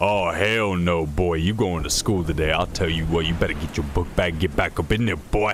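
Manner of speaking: stern, bossy, laying-down-the-law tone. Retelling dad ordering a return to school, imitating dad ordering. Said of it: "my dad tried to order".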